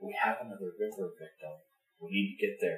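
secretive, hushed, very quiet half-whisper. Out of her earshot, refusing to speak up to a partner: half-whispering. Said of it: "I'm not going to speak up".

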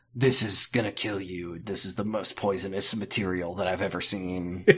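low, soft character voice. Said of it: "Dean would be like".

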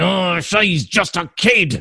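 put-on Australian accent. Imitating a cartoon character voiced with an Australian accent: Australian-accented Wolverine imitation. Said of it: "He was Australian".

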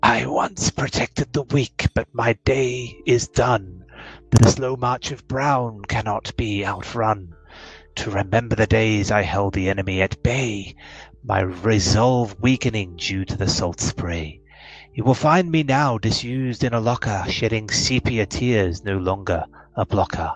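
horribly rusty, raspy talking-skull voice. Narrator voicing a talking skull as the player walks in, horribly rusty, raspy voice. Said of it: "reads in a horribly rusty or raspy voice".

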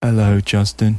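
mock depressed, gloomy voice. Describing how the depressed designer answers the phone, imitating a depressed voice. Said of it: "He's so depressed".

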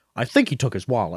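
confident, sure, self-assured, matter-of-fact delivery. Retelling a movie scene, imitating a minor character: confident line delivery. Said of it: "with such confidence".

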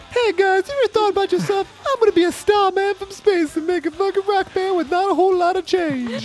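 mocking high-pitched voice. Mocking a rock band member's voice, the speaker imitates him in a mocking high-pitched voice. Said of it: "Why is his voice so high?".

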